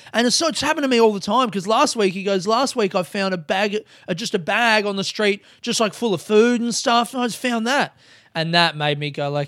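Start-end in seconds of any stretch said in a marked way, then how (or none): 2.4-7.9 heavy, strong put-on Australian accent. Retelling what a stranger said about finding cigarettes: imitating a loud, strong australian accent. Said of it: "that strong Australian accent and a very loud voice".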